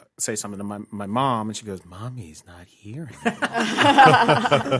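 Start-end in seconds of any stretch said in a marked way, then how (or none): 1.9-4.8 very slow, weird, eerie, swooping sing-song. Retelling a childhood game where mom spoke in a voice: imitating mom's weird creepy voice. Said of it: "this weird".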